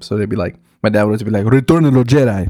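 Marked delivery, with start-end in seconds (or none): 1.4-2.5 put-on English spoken with a Spanish accent.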